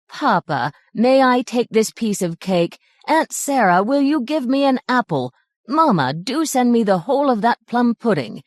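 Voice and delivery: high, whining begging voice. Reading a story aloud, voicing a greedy boy's requests: whining tone of voice. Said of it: "in a whining tone of voice".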